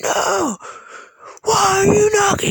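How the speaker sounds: hostile, high-pitched, loud screaming. Retelling a man screaming at a woman, retelling a scream. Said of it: "He's fucking just screaming at her".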